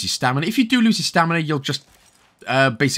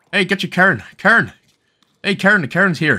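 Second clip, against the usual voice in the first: higher, louder mock Irish accent. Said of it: "I kinda sound like a Irish person".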